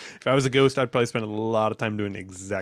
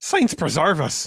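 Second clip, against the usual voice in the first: raised, failed put-on accent drifting into Irish; 6 semitones higher, 5 dB louder than usual. Put on the spot to do a voice, try an accent that comes out Irish. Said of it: "Do you want to try to?".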